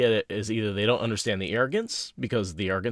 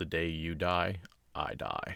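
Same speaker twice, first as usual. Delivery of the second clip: simple, low, flat deadpan delivery; 5 semitones lower, 9 dB quieter than usual. Reading Lan's response to his wife: simple, deadpan Lan line. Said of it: "Just very simple, deadpan, very Lan".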